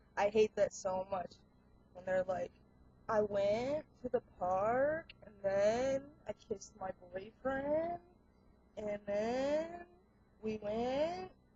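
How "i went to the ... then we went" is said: uptalk with rising tune on every phrase. Imitating girls who talk this way: imitating uptalk, every phrase a question. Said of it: "everything has to sound like it's a question".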